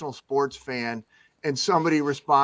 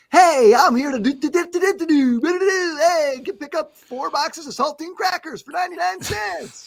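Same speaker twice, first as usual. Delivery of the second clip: very high, bright, light, happy, approachable upbeat voiceover; 13 semitones higher, 4 dB louder than usual. Describing the new trend in voiceovers, the speaker demonstrates a happy, light voiceover voice. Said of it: "happy guy, light, kind of non, you know, very approachable".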